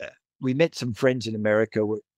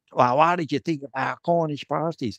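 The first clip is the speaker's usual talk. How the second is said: bad, put-on American accent, poorly done; 2 semitones higher than usual. Retelling a woman collecting his plate after the meal, bad american accent. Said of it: "this is my terrible attempt at American accent".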